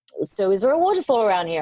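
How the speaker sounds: normal talking voice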